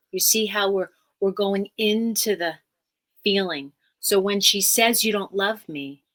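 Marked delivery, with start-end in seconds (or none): none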